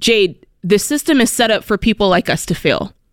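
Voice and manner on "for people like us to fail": ordinary talk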